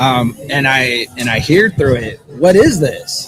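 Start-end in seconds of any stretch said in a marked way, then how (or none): 2.3-3.3 put-on high, curious, wondering little child voice. Recounting what came through her REM pod, the speaker is imitating a child's voice. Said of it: "In a child's voice".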